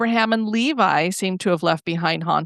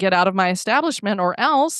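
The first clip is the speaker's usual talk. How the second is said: ordinary talk, nothing marked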